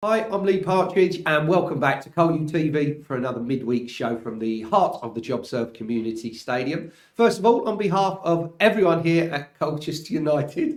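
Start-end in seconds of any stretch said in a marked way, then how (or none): 7.2-10.8 words breaking through laughter. Hosting col u t v's midweek show for colchester united: laughing while talking. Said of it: "shouldn't be laughing".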